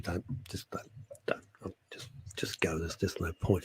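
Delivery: soft, hushed, pained, whispered plea.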